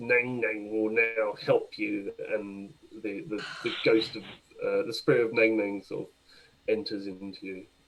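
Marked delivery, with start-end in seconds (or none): 0.0-2.1 croaky, froglike croaking voice. Game master voicing a slime that grows a frog head, in a croaking frog voice. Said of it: "a croaking voice comes out of it".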